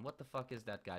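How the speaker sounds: normal talking voice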